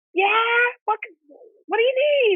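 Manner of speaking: mock yell, very high and drawn out. Recounting a knock on the hospital bathroom door, speaker re-enacts calling out: retelling a scream. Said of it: "I'm screaming from the shower".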